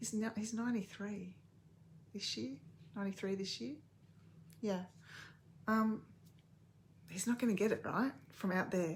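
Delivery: hushed whisper. Talking about their 93-year-old father, who may not watch, whispering. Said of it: "I'm whispering because".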